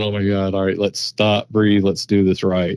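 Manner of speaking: acted-out panicked tone. Describing finding an unknown track, acting out own panic. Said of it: "panicking, going".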